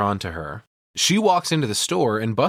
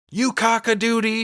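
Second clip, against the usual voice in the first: put-on yell, higher pitch; 12 semitones higher than usual. Retelling a film scene where a driver cuts her off: imitating Annie yelling. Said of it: "yells out the door".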